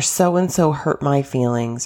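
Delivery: ordinary delivery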